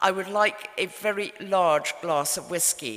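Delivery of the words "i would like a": ordinary delivery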